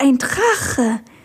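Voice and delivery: awed, amazed, full of wonder. A girl sees her friend's dragon for the first time, amazed. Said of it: "sagte Amalia staunend".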